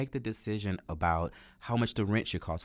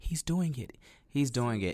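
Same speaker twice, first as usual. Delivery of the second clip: mock-tearful mouthing, much higher pitch; 3 semitones higher than usual. Speaker retells a mom watching her son practice, imitating tearful mouthed words. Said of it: "she's just in tears, and she just kept mouthing".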